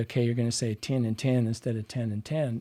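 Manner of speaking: plain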